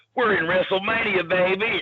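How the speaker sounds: put-on hillbilly accent, pitched very high. Retelling what a man said to him at WrestleMania, imitating a hillbilly accent. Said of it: "he's got that hillbilly accent".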